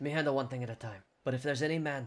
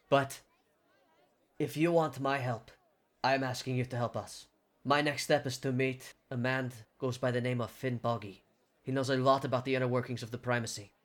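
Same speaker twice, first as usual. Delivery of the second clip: plain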